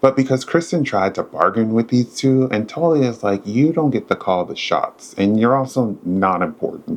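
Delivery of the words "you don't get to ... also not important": ordinary talk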